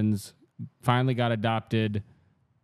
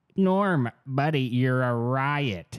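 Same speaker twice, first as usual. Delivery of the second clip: riot drawn out very slowly, held long; 4 semitones higher than usual. Retelling how a host answers every line: Dennis Miller impression. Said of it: "he just goes like".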